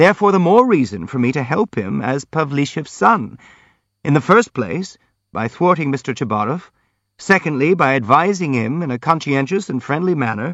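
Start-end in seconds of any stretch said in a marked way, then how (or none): none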